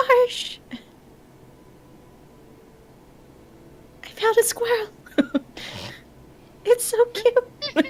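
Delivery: very high, tiny, super quiet hushed whisper. Speaker retells finding a squirrel and calling to Marsh: re-enacting whispering super quiet. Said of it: "I'm whispering super quiet".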